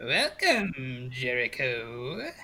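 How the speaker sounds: put-on cackling, cackly old crone voice. A game master voices a crone greeting the new arrival: cackling crone voice. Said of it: "As she cackles in laughter".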